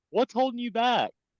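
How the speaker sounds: very high, helpful, inviting tone. Coaching Ivy after she sounded unsure about selling, helpful, offering. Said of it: "I'm almost saying it in a way of tell me so I can help you".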